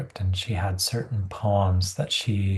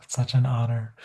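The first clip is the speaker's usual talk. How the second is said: mock crying while speaking; 2 semitones higher than usual. Retelling seeing a book's art for the first time: retelling own tearful reaction. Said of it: "we both just started crying".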